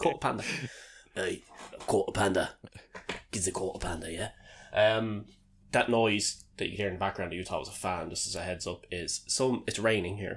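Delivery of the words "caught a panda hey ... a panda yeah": put-on Cockney, "quarter" said as "caught a". Showing how english people say quarter pounder: put-on cockney accent. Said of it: "It's like Cockney".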